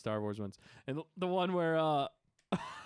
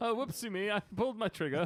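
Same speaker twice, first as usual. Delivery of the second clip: prim, proper, put-on cheerio-style British accent; 4 semitones higher than usual. Imitating a clumsy alien from a show: put-on British accent. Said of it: "he actually has a British accent".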